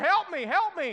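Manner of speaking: put-on panicked crying out. Retelling a joke about a man who fell into a lion exhibit: imitating a panicked man crying out. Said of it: "beginning to cry out".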